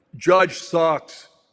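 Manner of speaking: loud, put-on Boston accent. Reading out a tweet from a Boston account, in a Boston accent. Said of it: "Good accent".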